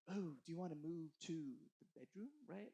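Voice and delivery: low, soft put-on British accent. Speaker retelling a question from a story, in a put-on British accent. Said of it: "I don't know why I became British".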